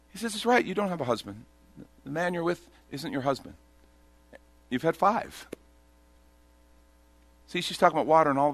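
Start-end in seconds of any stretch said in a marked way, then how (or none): 0.4-5.5 blunt, flat, plainly factual, matter-of-fact delivery. Retelling Jesus telling the woman about her husbands: imitating a matter-of-fact tone. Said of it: "he says it so matter of fact".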